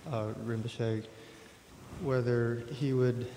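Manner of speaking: speaking too quietly, very soft, barely audible.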